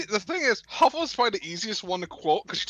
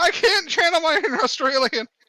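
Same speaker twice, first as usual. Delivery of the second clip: put-on frantic, panicked outburst, high and loud; 8 semitones higher, 5 dB louder than usual. Retelling a moment in a game's spider tutorial: imitating own panicked voice. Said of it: "And I'm in a panicked voice".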